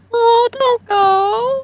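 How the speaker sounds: very high, squeaky, pleading tiny-creature voice. Telling how a grifflet begs someone not to leave, in little grifflet voice. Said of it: "the little grifflet kind of say".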